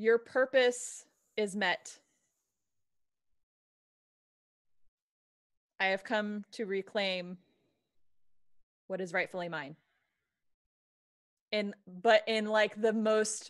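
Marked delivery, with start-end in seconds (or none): 0.0-9.7 regal, authoritative, commanding tone. Speaking in character to a statue with fiery eyes: mimicking its regal voice. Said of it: "mimicking the same voice that it emitted, the tone, the regality".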